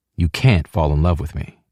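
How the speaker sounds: plain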